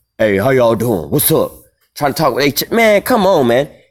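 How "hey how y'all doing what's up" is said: low, mannish voice, talking like one of the guys. Imitating women greeting people on the phone, imitating a woman talking like a man. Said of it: "talking like a man".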